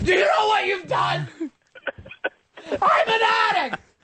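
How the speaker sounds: very high, shrill, hysterical screaming. Recalling the time his mom flushed his Coke down the toilet; retelling a scream. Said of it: "I'm screaming".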